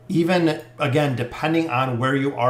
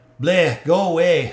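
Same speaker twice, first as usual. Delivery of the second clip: voice of a fairy-tale ogre; 3 semitones higher, 4 dB louder than usual. Speaker voices a reply, in an ogre voice. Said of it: "sounds like an ogre".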